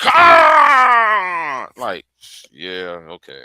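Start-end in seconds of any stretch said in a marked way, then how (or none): 0.0-1.7 hammy, very loud, dramatic, swooping overacted bellow. Imitating Captain Kirk clapping his hands together: imitating Captain Kirk's overacted yell. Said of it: "that's some overacting shit right there".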